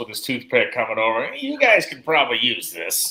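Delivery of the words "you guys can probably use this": friendly, sing-song, high-pitched, swooping voice. Imitating Austin dropping off spare parts: imitating Austin's high-pitched voice. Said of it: "in his kind of that high-pitched voice he has".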